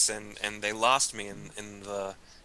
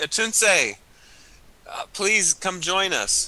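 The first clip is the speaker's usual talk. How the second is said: high, drawn-out calling out; 9 semitones higher, 4 dB louder than usual. Calling a companion over from a distance, in character: yelling for someone. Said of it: "I'm gonna yell for Atunse".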